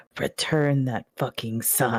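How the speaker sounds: slow, hushed half-whisper, very close to the ear. Voicing a character who hugs someone and speaks into their ear: half-whispering. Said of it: "whispers into your ear".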